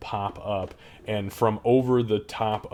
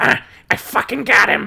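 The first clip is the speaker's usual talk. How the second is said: very loud, very high, shrill, rough goblin voice; 13 semitones higher, 9 dB louder than usual.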